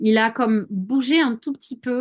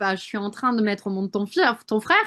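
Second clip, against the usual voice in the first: usual speaking voice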